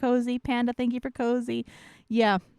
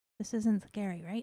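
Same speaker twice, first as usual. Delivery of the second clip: hushed, much quieter speech; 3 semitones lower, 9 dB quieter than usual. Returning to waiting viewers, the speaker checks they aren't startling anyone, speaking quietly. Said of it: "I'm being quiet enough".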